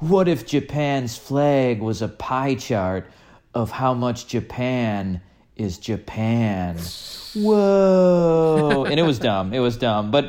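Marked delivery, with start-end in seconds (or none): 0.0-8.8 very slow surfer dude drawl, long drawn-out whoa. Retelling a video where some guy says deep thoughts, in a surfer voice. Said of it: "in a surfer's voice saying like".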